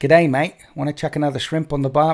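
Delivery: put-on Australian accent in exaggerated tourist-cliché style. Answering a chat request for an Australian accent: Australian accent. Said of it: "Winter's Aussie accent".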